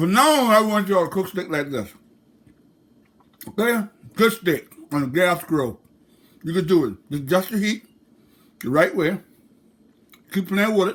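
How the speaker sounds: talking while chewing, with mouth full. Telling viewers how to cook steak on a gas grill, chewing while talking. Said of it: "Sorry about chewing y'all ears".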